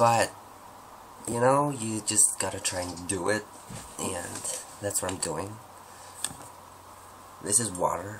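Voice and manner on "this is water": practised put-on American accent. Practicing accents, trying a line in an american accent. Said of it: "that's my American accent".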